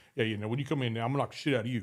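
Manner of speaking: deep, low, heavy, rumbling voice of a huge man. Retelling what Ron would say to other guys before a match, imitating Ron's deep voice. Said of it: "he's got that deep voice".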